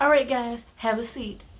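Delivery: serious, steady, firm but friendly tone. Showing how to tell the guys to have a seat: firm. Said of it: "like you want to say it firmly".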